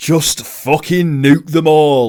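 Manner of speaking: outrageous blurted shout.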